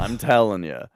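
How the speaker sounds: usual speaking voice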